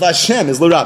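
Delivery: normal talking voice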